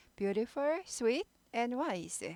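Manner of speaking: rising list intonation with final fall on "wise". English lesson on listing three items, rising list, falling on wise. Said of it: "끝을 내려요".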